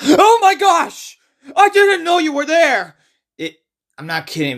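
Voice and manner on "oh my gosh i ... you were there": fake startled exclamation, very high, raised. Mocking the film's jump scares: mock startled exclamation. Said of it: "someone to sneeze or even go like".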